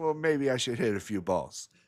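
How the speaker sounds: put-on slight, lightly done Russian accent. Retelling a pool game and quoting the other player, in Federer's little Russian accent. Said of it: "in his little Russian accent".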